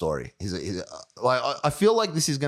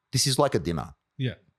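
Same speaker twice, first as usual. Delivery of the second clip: normal talking voice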